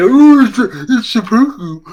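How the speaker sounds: very slow, high, drawn-out know-it-all tone. Imitating someone who would correct the word: imitating someone correcting. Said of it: "someone was gonna be".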